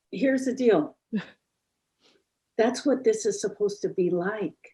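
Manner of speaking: tearful voice. Praising a man as an example of healing, while crying. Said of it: "I'm crying again".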